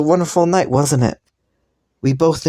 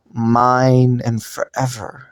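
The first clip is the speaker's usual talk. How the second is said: slow, heavy stress on mine and forever. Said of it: "I want to emphasize the words".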